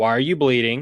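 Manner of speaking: pointed, very accusatory, blaming tone. Recalling walking in bleeding, quoting the wife's question, in a mock-accusatory tone. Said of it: "In a very accusatory voice".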